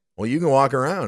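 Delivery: mock snide, snotty voice. Retelling what was said to a woman near their table: imitating a snotty tone. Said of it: "we maybe said it a little snotty".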